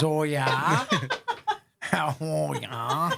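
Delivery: put-on very slow, drawn-out, sing-song Wisconsin accent. Retelling a co-host's reply: imitating her Wisconsin accent. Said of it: "with her Wisconsin accent".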